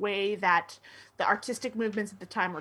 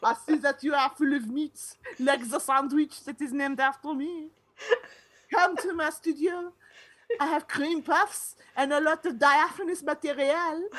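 put-on French accent, laid on, pitched up; 5 semitones higher than usual. Speaker voicing Rubens in a comedy bit, in a French accent as Rubens. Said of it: "when I gave him that accent".

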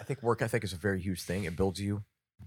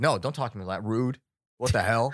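mock-rude snap, acted rudeness; 3 semitones higher, 6 dB louder than usual. Describing a moment at work, the speaker acts out a hypothetical reply, mock-rude snap. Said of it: "I could have approached it as a dick".

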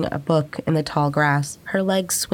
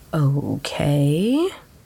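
slow, unhurried, drawn-out delivery. The narrator answers a woman who is acting oddly, said slowly. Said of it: "I said slowly".

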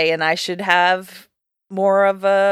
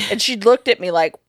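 ordinary delivery

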